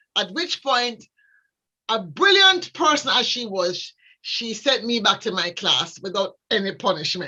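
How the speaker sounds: ordinary delivery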